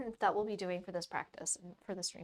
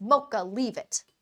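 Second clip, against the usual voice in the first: very loud, raised voice; 10 dB louder than usual. Speaker telling her dog Mocha to leave something, raised voice. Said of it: "Making me raise my voice".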